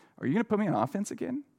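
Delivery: acted upbeat, eager, optimistic, hopeful tone. Retelling how a player asked about playing offense again: imitating an optimistic question. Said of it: "kind of an optimistic".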